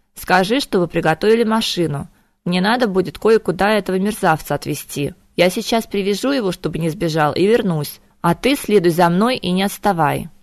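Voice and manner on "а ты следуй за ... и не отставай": ordinary delivery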